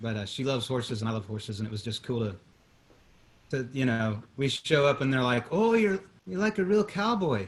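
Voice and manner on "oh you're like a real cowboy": put-on Irish accent, much higher, slower. Retelling what people said when you showed up horseback riding in Florence, Irish accent. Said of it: "I don't know why I'm talking like I'm Irish".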